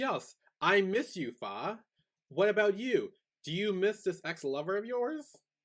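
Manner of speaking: mock sinister villainess voice, slow and high. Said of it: "She sounds evil".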